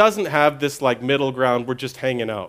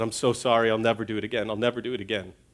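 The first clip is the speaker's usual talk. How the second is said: put-on, tearful crying child voice, quieter; 4 semitones lower, 7 dB quieter than usual. Retelling a five-year-old son's apology after being shouted at: imitating a crying child. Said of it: "started crying, and said".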